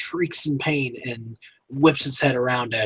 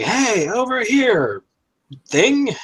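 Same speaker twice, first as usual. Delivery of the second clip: long, very high-pitched yell; 9 semitones higher than usual. Voicing a character waving at a monster to draw its attention: yelling to draw attention. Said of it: "begins yelling".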